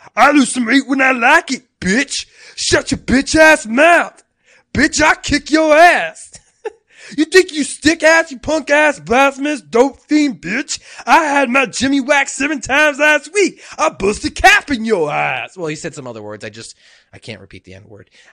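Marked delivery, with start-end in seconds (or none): 0.2-15.6 very high, very loud, shrill, poorly done cartoon voice. Retelling a cartoon scene, doing a poor Fat Abbott impersonation. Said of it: "forgive me for my poor impersonation here".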